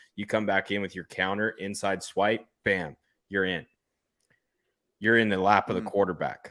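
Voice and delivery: ordinary talk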